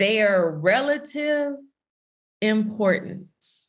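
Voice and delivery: slowed-down delivery. A speaker repeating a definition a second time for listeners, more slowly. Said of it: "say it a little bit more slowly".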